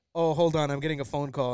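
ordinary delivery

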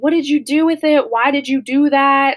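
loud sobbing scream, crying through the words. Recalling hearing their mom come in downstairs, imitating mom screaming and crying. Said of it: "she's screaming and she's crying".

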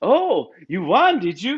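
put-on slow, faint Swedish or Norwegian accent. Act out her asking a man about his win, in Toast Giesen's little accent. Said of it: "she has a little accent".

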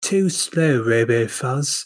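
put-on London accent, done for show. Speaker shows how everyone is doing London accents, in a put-on London accent. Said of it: "We're all doing London accents like this".

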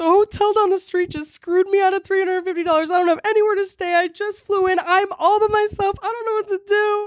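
mock crying, high, tearful, begging pleading. Retelling telling the hotel clerk about having nowhere to stay: imitating tearful pleading. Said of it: "And then I start crying again".

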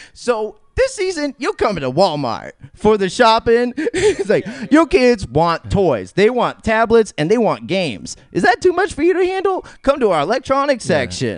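sassy, swooping spokeswoman commercial voice. Imitating the spokeswoman in a Walmart commercial: imitating a sassy Walmart spokeswoman. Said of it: "That's a great impression".

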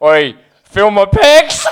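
slow, cocky, swaggering, show-off boast. Teasing a housemate who went to the gym: imitating a friend showing off. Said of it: "and he goes".

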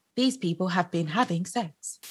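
robotic, machine-like delivery. Retelling what Alana says the next day, imitating Alana's robot voice. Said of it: "Alana's like this robot voice".

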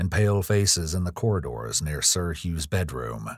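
plain

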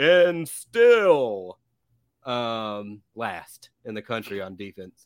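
belted-out wrestling ring announcer voice. Previewing a college football team's defense, the speaker says it in a WWE announcer voice. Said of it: "I'm going to say this like a WWE announcer".

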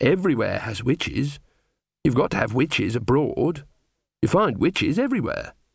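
ordinary delivery, nothing marked

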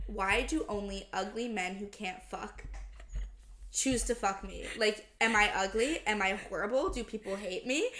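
ordinary delivery

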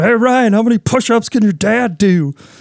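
high, yelled-out, carrying voice. Recalling someone in class yelling a question at the speaker; retelling a yell. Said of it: "And he just yells out".

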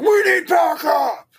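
very high-pitched shouted call. Retelling an actor's line into a phone: imitating an actor yelling. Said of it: "why are you yelling into the phone".

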